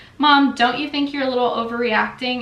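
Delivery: ordinary delivery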